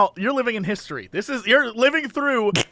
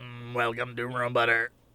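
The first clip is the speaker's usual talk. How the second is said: very low, flat, monotone robot voice; 12 semitones lower, 10 dB quieter than usual. Joking about a robot greeting customers at a bakery: robot voice. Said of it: "robots are gonna hit a point where they don't sound like that".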